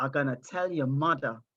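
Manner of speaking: soft half-whisper under the breath. Retelling a school friend's threat in class: imitating a half-whisper. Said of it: "telling me and whispering".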